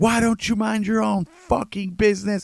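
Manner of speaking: piercing, very high-pitched, shrill yell. Retelling what the girl next door said: imitating someone shouting. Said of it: "the girl next door starts shouting".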